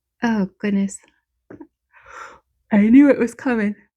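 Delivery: speaking while yawning. Speaker putting on stickers while recording for listeners, yawning. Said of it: "I feel terrible that I'm yawning".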